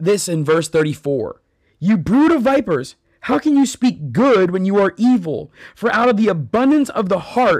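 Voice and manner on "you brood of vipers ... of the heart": loud, high scolding shout. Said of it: "he shouts".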